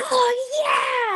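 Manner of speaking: bloodcurdling, bloody murder scream. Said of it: "I screamed a bloody murder".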